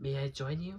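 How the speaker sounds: soft, hushed voice. Narrator reads a character's line from a story, quiet voice. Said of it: "said Rudyard in a quiet voice".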